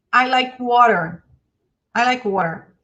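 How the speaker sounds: easy, relaxed American English accent. Teaching the difference between british and american english, demonstrating an american english accent. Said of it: "O inglês americano, ele é mais aqui".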